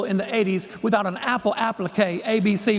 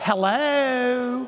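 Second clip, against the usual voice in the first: lovely, drawn-out, genteel Southern drawl; 4 semitones higher than usual. Retelling a phone call as the mentor answers: Margaret Saunders's Southern genteel voice. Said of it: "this lovely Southern genteel voice".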